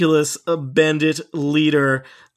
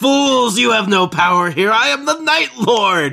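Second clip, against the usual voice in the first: high, ridiculous, cackling villain voice; 7 semitones higher, 4 dB louder than usual. Game narrator voicing the bandit leader after a chaos bolt misses, cackling villain. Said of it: "King's Teeth is followed by everyone's favorite villain in this adventure, the [name], the golden-masked, ridiculous bandit leader, / From behind his melted golden mask, / he kind of cackles at you. /".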